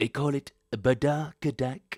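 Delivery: big, high, belted-out voice. Trying out how Trump would say a word, in a Donald Trump impression. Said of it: "how would Trump say badakadak? I'll give it a shot".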